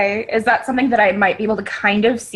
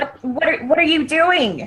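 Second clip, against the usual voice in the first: high-pitched shouting yell; 5 semitones higher than usual. In a role-play, the player's character yells at a woman from a cart. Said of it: "like yelling at her".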